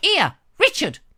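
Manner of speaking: high, screechy, screeching call. Retelling an invitation from Cynthia, imitating Cynthia's screeching voice. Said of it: "'cause she speaks like that".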